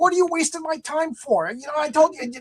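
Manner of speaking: play-acted very high-pitched, exasperated, angry yelling. Recounting yelling at the woman who showed a house without a garage, retelling own yelling. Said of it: "so I was like yelling at her".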